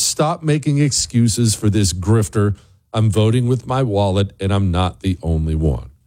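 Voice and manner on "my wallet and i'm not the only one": normal talking voice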